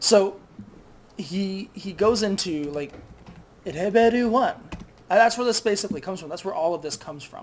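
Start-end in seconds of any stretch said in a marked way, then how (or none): 3.6-4.5 high Japanese video game announcer voice. Describing how each game level starts, imitating Japanese video game announcer. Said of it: "video game announcer voice".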